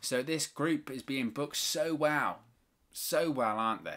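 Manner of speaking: dry, sarcastic British delivery. Commenting on how a wrestling group is booked: British sarcasm. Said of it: "That is British sarcasm".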